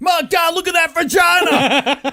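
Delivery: excited put-on commentator announcer voice. Imagining a wrestling commentator calling a porn scene: J.R. commentator impression. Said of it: "Can you imagine J R going".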